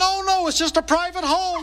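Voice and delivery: put-on shouting. Retelling yelling over a crowd to a sales lady: retelling a yell. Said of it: "And I yelled".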